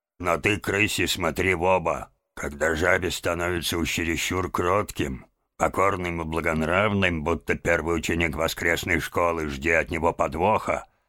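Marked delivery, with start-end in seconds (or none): none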